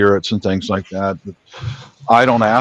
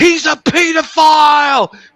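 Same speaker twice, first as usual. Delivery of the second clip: high, slow, furious screaming shout. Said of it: "that fucking guy was screaming at me".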